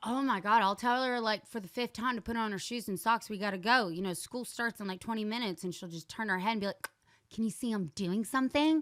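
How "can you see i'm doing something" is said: snippy, sassy, dismissive attitude. Retelling how a daughter answers when told to put on her shoes: imitating a sassy daughter. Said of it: "examples of her being sassy".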